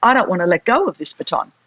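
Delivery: ordinary talk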